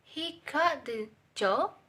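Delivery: level pitch, then rising high on job. Example of an affirmative sentence turned question, rising high on 'job'. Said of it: "He is flat voice level, and job is a high voice level".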